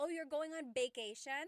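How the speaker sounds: Tagalog accent, vacation said with b. Imitating people speaking English with a Tagalog accent. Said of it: "when people are trying to speak English with a Tagalog accent".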